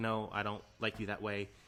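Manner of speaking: normal talking voice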